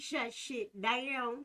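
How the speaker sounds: put-on Southern country accent, high. Repeating a phrase the way a country brother would say it: imitating a country brother's accent. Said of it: "I gotta say it like my country brother".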